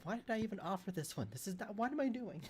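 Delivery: very high, mumbled muttering. Having just offered to take the lead and look around, mumbling to oneself. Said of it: "And I'm mumbling to myself".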